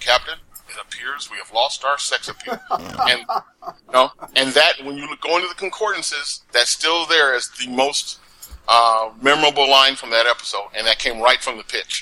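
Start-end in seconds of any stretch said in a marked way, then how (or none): 0.0-2.6 mock flat deadpan delivery, quieter. Recalling the episode's most memorable line from the pitch, do a mock Vulcan deadpan. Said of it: "that Vulcan deadpan".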